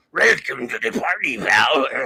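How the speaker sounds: rasping lizard-like alien voice.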